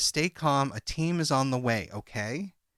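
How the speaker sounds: plain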